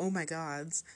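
plain

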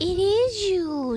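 squeaking. Piglet answers Pooh through the door, squeaked. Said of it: "squeaked Piglet".

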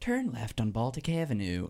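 terrible put-on Irish accent. Imitating the voice that tells you where to go, as Siri's bad Irish accent. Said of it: "She has a terrible Irish accent".

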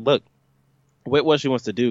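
normal talking voice

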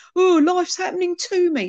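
high, mocking put-on voice. Speaker mimics a way of thinking, then apologizes: mocky put-on voice. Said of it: "I do that mocky voice".

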